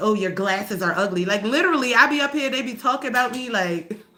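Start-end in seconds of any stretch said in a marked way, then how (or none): none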